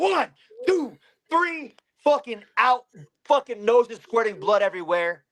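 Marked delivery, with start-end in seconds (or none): 0.0-1.8 high, sharp delivery. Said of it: "and I went".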